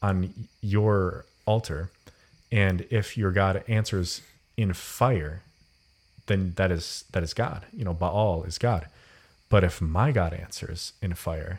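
ordinary delivery

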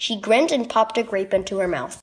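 plain

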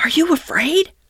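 shaky, high, trembling, quavering voice. A narrator reads one animal asking his companion a question; shaking half-whisper. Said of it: "he found breath to whisper, shaking".

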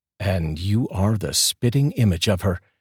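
ordinary delivery, nothing marked

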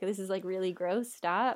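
ordinary delivery

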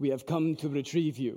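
clumsy, low-pitched, badly done fake Russian accent. Telling a story of russian soldiers arriving at your house, in a bad russian accent. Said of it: "That's a bad accent".

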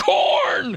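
panicked shout. Answering a caller's question while lost in a corn maze: panicked shout. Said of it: "don't, don't, don't panic".

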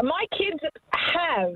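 cross, sore, angry tone. A caller answers the host's question about her kids, angry. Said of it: "you sound angry about it".

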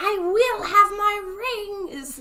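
very high, loud woman's voice, "my" drawn out. Retelling how a man put on someone else's voice to speak: Chani's voice. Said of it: "he puts on Chani's voice".

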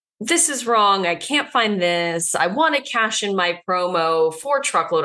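plain

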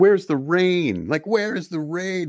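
shrieking at very high pitch. Retelling a scene from a show: imitating someone screaming. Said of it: "And he's just screaming".

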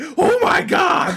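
very high, raspy, odd-sounding voice. Recalling Antonio's reaction, speaker imitates his weird, raspy, high-pitched voice. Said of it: "weird, raspy, high pitched voice".

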